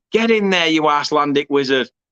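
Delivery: ordinary delivery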